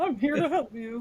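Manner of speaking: silly, dopey cartoon-character delivery. Asked to voice the skull guy as seventies Travolta, the speaker ends up sounding like Goofy. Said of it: "I sounded like Goofy or something".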